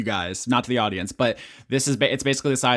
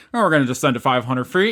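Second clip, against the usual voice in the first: pilot intercom announcer voice, louder and faster; 5 dB louder than usual. Describing an amplified voice, imitating a pilot announcing over an airplane intercom. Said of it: "He's talking into one of those".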